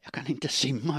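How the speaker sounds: whispered stage-style, high pitch. A man speaks to the woman he has just thrown into the cabin, whispered. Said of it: "viskade han".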